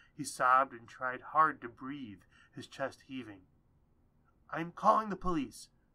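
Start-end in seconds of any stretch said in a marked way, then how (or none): 4.5-5.7 sudden, high, sharp yelp. Narrator reading a woman's line as she runs from the room; yelped. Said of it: "Stella yelped".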